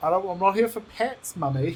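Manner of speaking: high, aloof, cold-shouldering cat voice. Voicing the cat who refuses being petted: voicing the cat. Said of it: "He's like".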